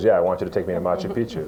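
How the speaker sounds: plain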